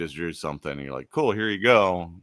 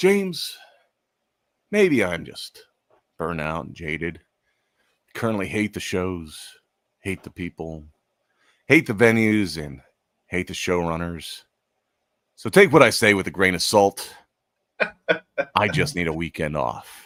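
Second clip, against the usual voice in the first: mock-dramatic, put-on dramatic reading aloud. Reading someone's written message aloud, mock-dramatic reading. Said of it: "I'm gonna do my best to read this in a dramatic".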